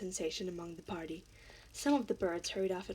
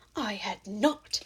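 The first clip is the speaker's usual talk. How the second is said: sharp, loud, angry, snapping cry; 6 dB louder than usual. Reading the story aloud, the narrator voices the mouse's retort with a sharp, very angry cry. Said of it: "cried the mouse sharply and very angrily".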